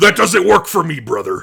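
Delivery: belted out at full volume. Asked for a full impression of a wrestler's refusal: Hulk Hogan impression. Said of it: "go ahead and do a full impression".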